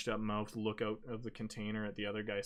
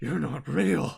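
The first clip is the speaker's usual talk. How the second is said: very loud, high-pitched, breathless panicked panting; 6 semitones higher, 12 dB louder than usual. Voicing a captive who panics at an illusion: panicked, breathing hard. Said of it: "And he starts panicking again".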